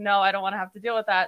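usual speaking voice

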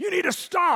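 put-on loud, high yell as if across a room. Retelling a police officer yelling at a worshiping man across the room: retelling a yell. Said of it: "he's yelling at him across the room".

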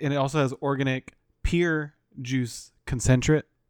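usual speaking voice

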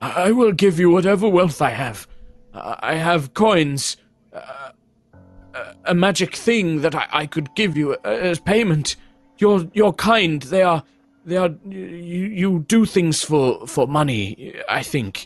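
put-on stammering, pleading old man. Voicing an old man with shaking hands offering payment: stammering, pleading old man. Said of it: "the older man looks at you with kind of shaking hands".

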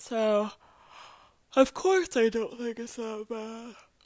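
loud words spoken mid-yawn. Talking to listeners about a task not yet started, yawning. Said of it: "I'm sorry, I'm yawning".

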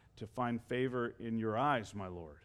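very low, quiet, meek and sheepish voice. Retelling a biblical story of a brother answering his brother's question, mock-sheepish voice. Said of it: "in a sheepish voice".

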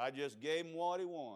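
put-on very low, soft, drawling Southern accent. Retelling what his dad answered when Mom came running out, dad's Southern drawl. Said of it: "my dad's southern drawl".

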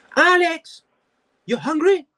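put-on thick Korean accent, high and loud. Imitating the speaker's grandmother, in her thick Korean accent. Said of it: "her thick Korean accent".

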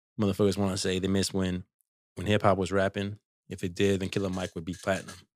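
normal talking voice

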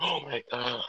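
loud, mock freaked-out, startled cry of alarm. Retelling when the door opened, imitating Brianna freaking out. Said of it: "Brianna like freaked out".

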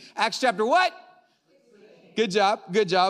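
loud, excited shouting. Preacher opening the sermon, quizzing the congregation on the chapter: excited yelling. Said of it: "I don't know why I'm yelling".

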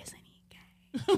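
very quiet, hushed, gossiping whisper. Telling a prom story, acting out classmates whispering, imitating their whisper. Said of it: "everyone was like whispering like".

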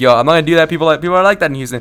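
normal talking voice

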